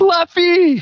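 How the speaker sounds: very high, anguished howling cry. A game master voices someone crying out from inside, an anguished cry. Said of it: "you hear an anguished voice from in there".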